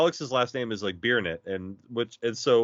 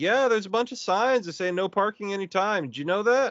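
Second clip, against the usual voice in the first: put-on, very high good ol' boy voice; 9 semitones higher than usual. Retelling warning someone they're parked illegally: put-on good old boy voice. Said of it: "I throw on my best good old boy voice".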